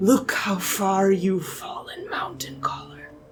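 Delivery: completely different, eerie, disembodied, giant-like voice. Voicing a disembodied voice speaking through a character: disembodied giant voice. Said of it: "a completely different voice emerges from Oscar in the language of giant".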